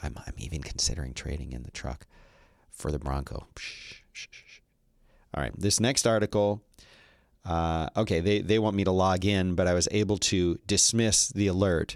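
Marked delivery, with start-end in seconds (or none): 0.0-3.5 quiet, hushed, secretive confiding aside. Joking that the truck must not hear, saying it quietly. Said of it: "I'm gonna say this quietly".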